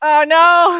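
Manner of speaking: way too excited, shrill, very high and loud. Playing a tabletop game, told to make an attack roll on a teammate, way too excited. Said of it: "I'm way too excited about being a bear".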